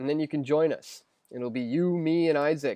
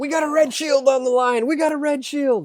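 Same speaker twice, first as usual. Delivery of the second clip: unhinged, out-of-control yell, shrill, very high and loud; 11 semitones higher, 8 dB louder than usual. Recalling the interview with Rothschild, imitating Alex Jones losing it. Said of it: "he lost lost it".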